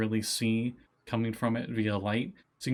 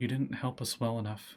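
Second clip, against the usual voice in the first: put-on eerie girl voice, quieter; 4 dB quieter than usual. Voicing a shadow that speaks to a player: voice of Hemlock from a shadow. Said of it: "you just hear the voice of Hemlock emanate from it".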